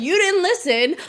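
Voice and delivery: acted out, shrill, very high yell. Describing himself as a viewer yelling at the movie, mock yelling at the screen. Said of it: "viewer yelling at my you screen".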